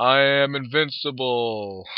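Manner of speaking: put-on child putting on a towering giant monster voice. Narrator reading Jeff's line as he tries to play a giant monster, giant monster voice. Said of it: "doing his best to impersonate a giant monster".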